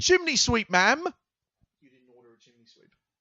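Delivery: very loud, swooping chimney sweep voice. Acting out a scene at the door as asked: playing a chimney sweep. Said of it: "Can this be a role play?".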